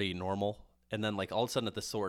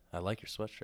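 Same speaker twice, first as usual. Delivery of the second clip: put-on suggestive delivery, quieter; 6 dB quieter than usual. Repeating another speaker's compliment back to them: imitating in a suggestive tone. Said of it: "the way I said that sounds kinda sexual".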